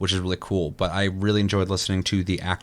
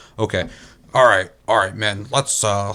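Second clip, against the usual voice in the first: mock bored, uninterested tone, louder; 5 dB louder than usual. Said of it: "it seems so fucking whatever".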